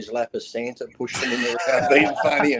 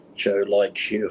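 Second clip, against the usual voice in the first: acted-out whisper, slower; 4 semitones lower than usual. Recounting a remark once whispered to the speaker, retelling a whisper. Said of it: "he whispers at me".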